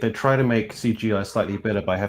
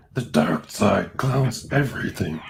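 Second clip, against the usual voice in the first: possessed, exorcism-like voice. Taking a turn at the group's Yoda impressions: exorcist Yoda voice. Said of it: "exorcist Yoda".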